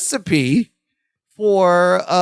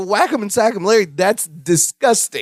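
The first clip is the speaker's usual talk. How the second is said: ordinary delivery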